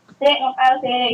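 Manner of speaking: ordinary talk, nothing marked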